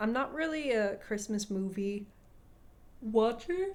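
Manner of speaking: words yawned out, talking through a yawn. Chatting with another person about Christmas movies, the speaker talks while yawning. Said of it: "Sorry, I'm yawning".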